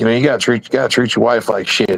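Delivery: ordinary talk, nothing marked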